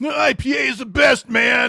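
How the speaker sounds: mock very high, very slow, drawn-out angry yell. Imitating anybody who yells about disliking IPAs: imitating someone yelling about IPAs. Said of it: "anybody that, uh, you know, wants to yell at me".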